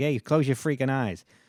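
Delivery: put-on New York accent. A speaker imitating how a New Yorker would say it, in a New York accent. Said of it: "you wouldn't hear a New Yorker like".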